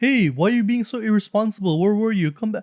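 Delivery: put-on high scolding tone. Retelling a film scene where parents chide their daughter: imitating parents chiding. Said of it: "chiding her for".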